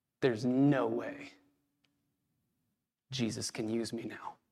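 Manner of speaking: mumbling, low and quiet. Acting out a man who feels he failed everyone, walking to his room, muttering under his breath. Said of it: "he mutters under his breath".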